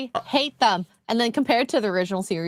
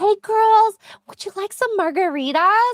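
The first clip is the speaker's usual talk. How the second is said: very high-pitched, put-on, try-hard cool mom voice; 11 semitones higher, 3 dB louder than usual. Comparing someone to a mom trying to be so cool: imitating the too-cool mom from Mean Girls. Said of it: "the one mom is trying to be so cool".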